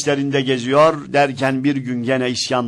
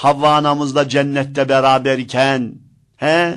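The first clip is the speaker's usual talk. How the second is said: normal talking voice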